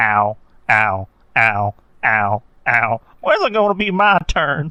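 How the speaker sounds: very slow, drawn-out, pained yelps, "ow" after "ow". Retelling a cartoon scene of a character in pain: Cleveland voice. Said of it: "you just hear Cleveland going".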